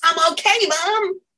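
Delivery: put-on bright, cheery, loud, very high-pitched shout. Retelling a voice heard in the head after the pet's burial: imitating a loud cheerful voice. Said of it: "I hear this loud, cheerful voice in my head going".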